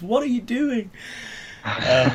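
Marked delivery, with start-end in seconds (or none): 0.0-0.9 mock, very high, shrieked commentator-style scream. Retelling a commentator's reaction to a teammate ruining a punt: imitating a commentator screaming. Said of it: "he just screams".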